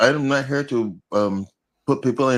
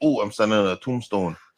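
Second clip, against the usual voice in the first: plain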